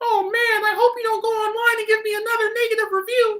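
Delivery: odd put-on voice, very high and loud. Speaker shows a weird voice they might pull out at work, weird put-on voice. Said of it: "some weird voice I'll pull out".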